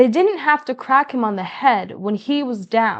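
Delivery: plain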